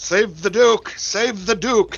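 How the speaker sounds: high, called-out yell in a put-on voice. Yelling out in character during a fight to save the duke: in-character yell. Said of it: "I I yell out".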